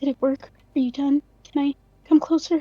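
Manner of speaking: hushed whisper. Narrating a story, the reader voices December's impatient line: whispering. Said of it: "She whispers".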